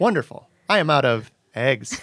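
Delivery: machine-like, computery delivery with odd, offbeat rhythm. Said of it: "now I'm going too computery with it".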